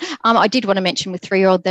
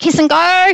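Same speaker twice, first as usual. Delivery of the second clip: put-on very high, loud yell; 10 semitones higher, 6 dB louder than usual. Retelling a prep teacher calling out across the room: imitating a teacher yelling. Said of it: "she'd yell, yell out".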